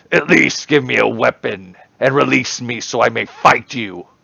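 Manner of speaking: gritty, raspy, high hobgoblin creature voice. The game master voices the captured hobgoblin facing the party, captive hobgoblin voice. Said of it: "information we could have gained from the Hobgoblin. / He pulls his head back and sits up".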